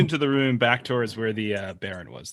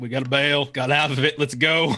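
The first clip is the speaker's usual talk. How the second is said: raised, pitched-up shout; 5 semitones higher, 5 dB louder than usual. A player voicing their character to the party, shouting. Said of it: "I'm shouting like".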